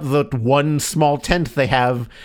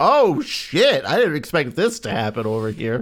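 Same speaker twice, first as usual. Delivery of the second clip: slow, startled put-on ghost-kid voice. Joking about ghosts of dead children floating around: voicing ghost children. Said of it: "ghosts of dead children ... just going".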